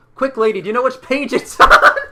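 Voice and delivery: booming, very loud, very high, urgent yell. Running to the fire in a game scene, yelling out to a lady: yelling out in character. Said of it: "I'm gonna yell out".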